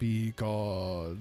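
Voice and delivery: spooky, eerie witch voice. Quoting a favorite voice line of the witch: spooky witch voice. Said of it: "the spooky voice that says".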